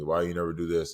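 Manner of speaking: plain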